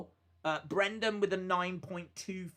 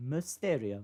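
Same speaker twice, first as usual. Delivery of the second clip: mimicking a woman's voice; 6 semitones lower than usual. Complaining that she can't say a legend's name, imitating the woman's voice. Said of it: "and she goes".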